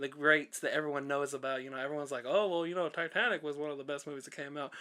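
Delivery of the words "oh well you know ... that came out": plain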